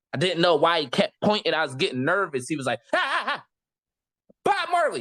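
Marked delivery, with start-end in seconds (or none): 2.9-5.0 put-on very high, sing-song, swooping heckling shout. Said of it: "He just started shouting at me".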